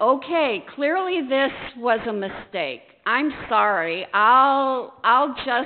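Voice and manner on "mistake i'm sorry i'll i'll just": plain reading voice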